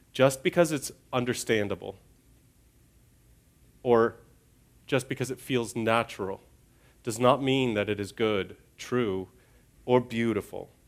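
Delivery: slow, measured, word by word. Repeating a tough lesson for listeners: slower, deliberate delivery. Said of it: "say it again a little more slowly".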